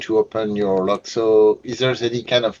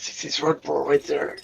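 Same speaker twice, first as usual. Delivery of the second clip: whispered, pitched much higher; 5 semitones higher, 4 dB quieter than usual. Pointing out another player in the game, whispering. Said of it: "I'm just whispering to".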